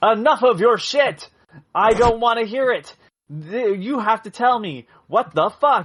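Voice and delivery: mock hammy overacted anger, high and slow. Critiquing an actor's angry phone scene, imitating his hammed-up angry delivery. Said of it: "you're really hamming it up".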